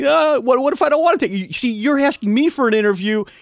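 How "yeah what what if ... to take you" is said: playful, joking, tongue-in-cheek, rattled off quickly. Retelling a man's argument with the audio technician, tongue in cheek. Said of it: "all tongue in cheek".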